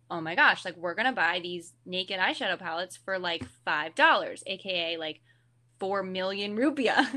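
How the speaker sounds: usual speaking voice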